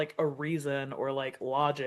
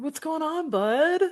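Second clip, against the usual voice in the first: put-on tipsy, drunk-sounding voice, pitched way up high; 14 semitones higher, 4 dB louder than usual. Showing how to talk to yourself: put-on drunk bestie voice. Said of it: "talking to myself like I'm your drunk bestie at a bar".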